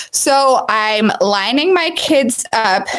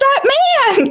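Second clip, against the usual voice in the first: put-on very high-pitched, stubborn, insistent little child's voice. Retelling a child pointing at an empty tunnel: imitating a child insisting. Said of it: "He's just so insistent".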